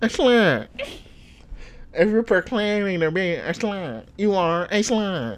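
mechanical robot voice. Imitating a man from a clip, mocking him: imitating a robotic voice. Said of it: "He sounds like a robot".

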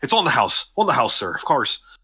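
put-on speaking with an Irish accent. A character refilling a customer's glass speaks in an irish accent. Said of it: "you really hear the Irish accent".

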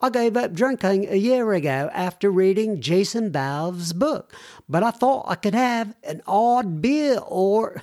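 really bad fake British accent. Quoting what a woman said to her, in a really bad accent. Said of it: "That's a really bad accent".

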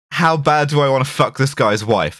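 ordinary delivery

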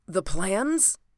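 gasped out, short of breath. Narrator reads the man in the corner speaking up in a gasping voice. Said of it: "came in a gasping voice".

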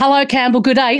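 put-on Australian accent. Greeting a person in australia: put-on aussie accent. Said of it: "Sorry about the Aussie accent".

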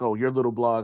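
ordinary delivery

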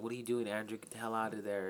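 normal talking voice

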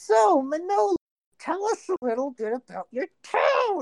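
irritated, exasperated tone. Voicing Caleb asking Manola about her town: sounding angry. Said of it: "Why so angry?".

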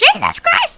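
overdone, shrill scream, very high. Retelling how the younger witch in the film delivered her line: imitating a witch screaming. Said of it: "screaming her line".

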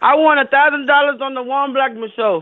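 yelling as loud as possible, full volume. Asked to yell a soundbite line: yelling as loud as possible. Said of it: "yell out as loud as you can".

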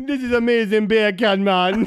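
loud, high put-on Jamaican accent, bacon said "beer can". Showing off the one accent they can do: Jamaican accent. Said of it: "That's my one accent".

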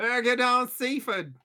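loud, drawn-out London gangster voice. Joking about Seaford from London gangster films: Guy Ritchie impression. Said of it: "That's my Guy Ritchie impression".

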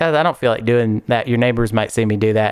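normal talking voice

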